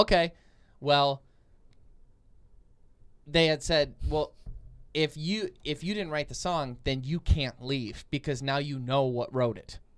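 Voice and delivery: ordinary talk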